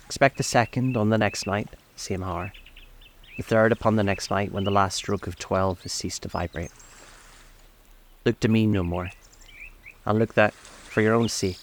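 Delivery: plain reading voice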